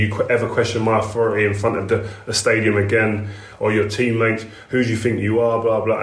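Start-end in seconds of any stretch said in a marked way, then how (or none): none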